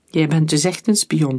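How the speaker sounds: ordinary delivery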